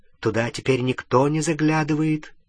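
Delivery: ordinary delivery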